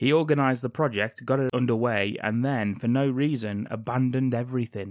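ordinary delivery

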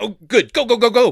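high, loud, urgent, eager voice.

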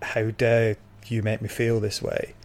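usual speaking voice

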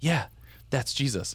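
quiet, hushed, secretive whisper under the breath. Retelling pointing something out to him during church, imitating their own whisper. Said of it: "I'm like whispering".

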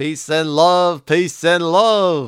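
put-on voice, each "love" stretched out. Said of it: "My [name] sounds like this".

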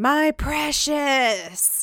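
high-pitched creature character voice. Retelling a scene where someone unseen says a line: Gollum voice. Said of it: "who is the character of Gollum".

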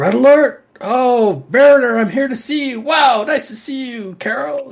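mock yelling. Imitating a favorite Trek character's lines: imitating someone yelling. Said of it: "he's just yelling a lot".

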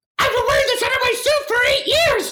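very high-pitched puppet character voice. Quoting a Muppets movie line after being asked for one: Gonzo voice. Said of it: "Can you do a Gonzo?".

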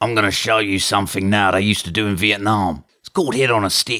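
taunting slasher-villain killer voice. In a parody scene where Mick Taylor meets Bane, Mick Taylor voice. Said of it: "this is where Mick Taylor met Bane".

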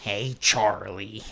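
bad Philadelphia accent, pitched low. Calling out to Charlie, in a bad It's Always Sunny accent. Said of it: "That was a bad accent".

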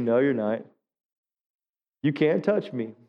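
easy, calm, unshaken voice. Speaker shows the audience how to answer someone's threats, smiling reply. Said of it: "you just smile and you say".

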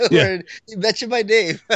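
very high, giddy pleading tone.

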